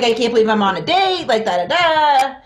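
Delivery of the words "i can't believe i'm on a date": normal talking voice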